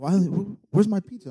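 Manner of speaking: mock worked-up, high, mad delivery. Retelling a friend's complaint about a missing pizza: imitating Damar getting mad. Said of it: "then he gets mad".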